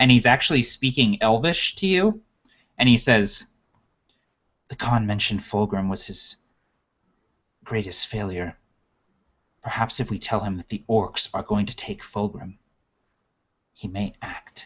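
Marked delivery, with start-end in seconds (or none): 4.7-14.7 hushed whisper, much quieter. In a role-play game, a quiet companion leans in, whispering in your ear. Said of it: "The Provokers, along with former Convoker [name] Suresteel, must journey into the savage lands of [name]. / and he's been kind of quiet up until this point, / [name], and he leans in and like kind of".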